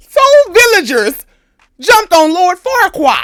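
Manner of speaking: high, loud delivery while laughing.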